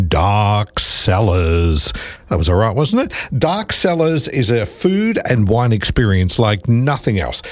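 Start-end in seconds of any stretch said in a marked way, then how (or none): 0.1-1.9 low, spooky voice. Announcing a Halloween event name in a radio ad, in a spooky voice. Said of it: "get into spooky voice".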